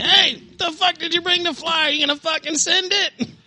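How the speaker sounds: mock, very high-pitched hollered yell. Retelling how a friend turned around at the field: imitating someone yelling. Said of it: "he turns around and yells at me".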